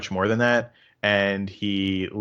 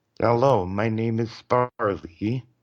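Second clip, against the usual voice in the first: flat, level, monotone synthesized robotic computer voice; 2 semitones higher than usual. Recalling a habit of talking in an impression, Stephen Hawking voice. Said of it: "I can do the Stephen Hawking's voice fairly well, so I was using that voice for it. So I'd be like".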